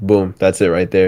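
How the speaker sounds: plain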